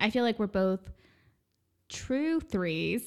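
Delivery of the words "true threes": measured, slow, deliberate, careful pacing. Agreeing with the other speaker, said slowly so as not to mess up. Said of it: "I just said that slowly so I wouldn't mess up".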